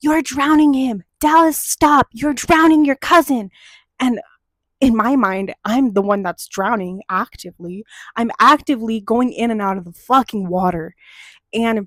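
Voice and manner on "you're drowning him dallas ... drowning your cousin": urgent, scolding, loud shouting. Retelling how an aunt yelled from the poolside, imitating aunt yelling. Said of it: "she's yelling at me".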